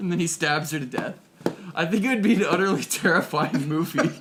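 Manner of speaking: very loud speech with laughter throughout. Describing an imagined horror movie scene to the other speaker, laughing while talking. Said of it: "you're laughing as you're explaining it".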